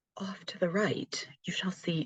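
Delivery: soft, hushed, whispered documentary narrator voice. After a bad Australian accent, speaker tries again: attempted David Attenborough impression. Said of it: "Let's see if I can get David Attenborough this time".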